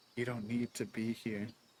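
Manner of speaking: put-on soft, soft-spoken voice. Retelling how someone talked them down: imitating a soft voice. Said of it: "your voice went all soft and you were all like".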